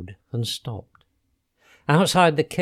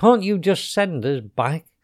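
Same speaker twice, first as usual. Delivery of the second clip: plain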